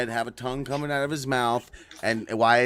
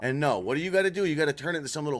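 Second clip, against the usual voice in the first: normal talking voice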